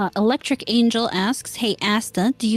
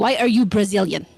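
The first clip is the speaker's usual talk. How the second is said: put-on Nigerian accent. Reading out a listener's question to a co-host, in a nigerian accent. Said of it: "in a Nigerian as- accent".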